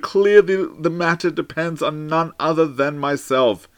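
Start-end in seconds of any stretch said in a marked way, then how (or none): none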